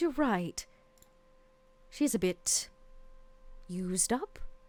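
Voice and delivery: resigned, soft, slow, weary sighing delivery. Voicing the queen agreeing about the courtesan: sighing as the queen. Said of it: "the queen sighs, and she says".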